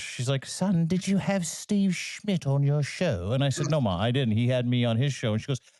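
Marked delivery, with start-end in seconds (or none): 0.5-3.3 high, slow British mother voice. Son retelling his mother's phone call to him, imitating his British mother. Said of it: "she's British".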